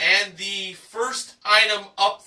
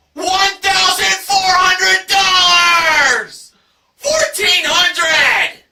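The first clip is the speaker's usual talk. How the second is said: high, loud, slow enthusiastic shout. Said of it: "very loud, enthusiastic voice".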